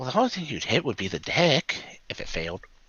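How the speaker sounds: muttered under breath. A character remarks as another walks away grumbling, muttered under breath. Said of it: "Slightly under his breath".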